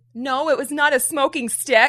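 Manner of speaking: mock, forceful, loud, high-pitched voice. Recounting being asked about a smoking stick at church, retelling a loud denial.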